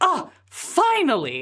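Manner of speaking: haughty, self-important, high-pitched voice. As narrator, voicing someone inside the carriage, pompous. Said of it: "the very pompous sounding sort of like".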